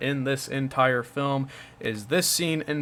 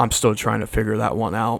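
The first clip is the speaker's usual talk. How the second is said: utterly straight-faced, deadpan, flat delivery; 4 semitones lower, 4 dB louder than usual. Retelling a reply given with a straight face: imitating a straight-faced reply. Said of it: "straight face".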